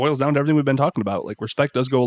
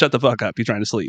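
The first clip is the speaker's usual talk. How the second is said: exaggerated put-on heavy Russian accent; 2 semitones lower than usual. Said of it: "in his big Russian accent".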